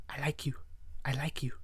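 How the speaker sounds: put-on barely audible, breathy, very soft, strange girl's voice. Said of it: "Like that. Like, that's how she talks".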